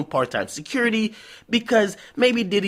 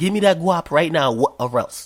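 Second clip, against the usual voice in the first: put-on threatening, menacing voice; 4 dB louder than usual. Imitating a naked bank robber demanding the money: imitating a robber's demand. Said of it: "And he says".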